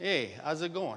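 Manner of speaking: put-on New Yorker's accent. Comparing greetings across regions for an audience: New York accent. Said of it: "And the New Yorker goes".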